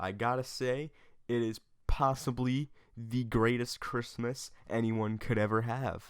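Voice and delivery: slow, heavy, ironic, mocking, overstated sarcasm. Opening a video about how Christmas went this year: sarcastic. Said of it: "I'm being sarcastic".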